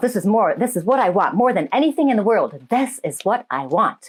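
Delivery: plain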